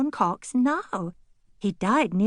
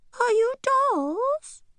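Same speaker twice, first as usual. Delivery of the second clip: very high, tiny squeaky voice, "dolls" drawn out; 14 semitones higher than usual. Reading a story, voice the caller from inside a package in a teensy voice. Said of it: "said the teensy voice".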